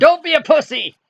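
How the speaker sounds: shrill, very loud, high-pitched full-out yell. Picturing someone lying on the ground under this thing, acting out a yell.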